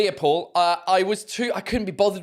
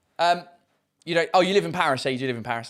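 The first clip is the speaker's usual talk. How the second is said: usual speaking voice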